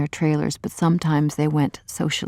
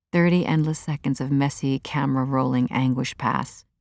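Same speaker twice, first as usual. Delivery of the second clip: ordinary delivery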